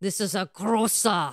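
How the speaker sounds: put-on German accent. Speaker unsure how to pronounce a word, trying a put-on German accent. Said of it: "Clear my throat and sound like a German".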